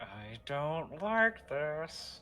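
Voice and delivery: very quiet muttering under the breath. Speaking in character, uneasy about a figure ahead: said under his breath. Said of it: "Rayquil says under his breath".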